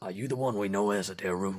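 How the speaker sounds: put-on Georgian accent. Voicing a Goliath druid meeting a player's character: put-on Georgian accent with gravel. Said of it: "let me see if I can put a little gravel in it".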